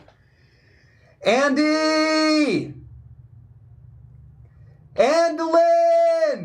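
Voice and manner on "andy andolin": high, long, drawn-out yell. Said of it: "and he's gonna yell".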